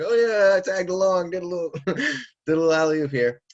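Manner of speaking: high, loud cocky bragging. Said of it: "The kid's like".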